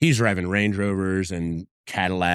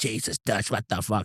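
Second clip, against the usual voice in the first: put-on hushed New Jersey tough-guy accent; 2 semitones higher, 5 dB quieter than usual. Telling the hosts about Giovanni, imitating Giovanni's New Jersey accent. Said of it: "He's got the accent and everything".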